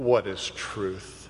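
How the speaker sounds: acted, derisive, low, sneering scorn. Preaching to beloved listeners, quoting Pilate in an imitation of his mocking sneer. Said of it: "mocking, sneering voice of Pilate".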